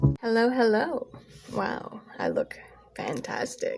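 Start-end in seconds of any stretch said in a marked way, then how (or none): 1.5-3.8 whispered, breathy, dry sarcastic remark. Greeting viewers while looking rough on camera: sarcastic. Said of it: "Note the sarcasm".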